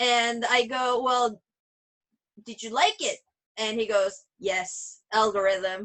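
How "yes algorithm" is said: imitated machine-like voice, much lower. Quoting a brother's answer about lunch, imitating him talking like a machine. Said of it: "my brother talks like a machine".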